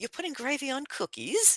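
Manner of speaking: aghast, very high-pitched, horrified disbelief. Retelling how the British react to biscuits and gravy: imitating a horrified British person. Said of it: "You wanna see a British person look at horror".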